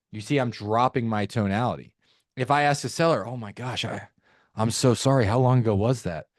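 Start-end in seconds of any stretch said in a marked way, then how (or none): 3.3-6.2 concerned, sympathetic, caring tone. Demonstrating how to respond to a seller, using a concerned tone. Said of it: "we're gonna go into a concerned tone".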